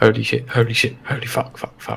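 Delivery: very soft whisper under the breath. Voicing a frightened character in a fight, whispering under breath. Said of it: "I whisper under my breath".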